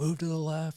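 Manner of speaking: very high, urgent yell. Retelling support guys on boats yelling directions: imitating someone yelling. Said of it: "they'd be yelling at us".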